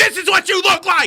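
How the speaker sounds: shrill, very high, loud taunting yell. Joking about a Freddy Krueger movie marathon with patients: mock yelling at patients. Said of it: "yelling at the patients".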